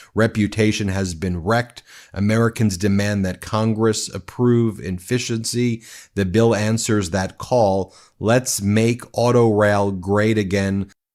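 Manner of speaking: ordinary talk, nothing marked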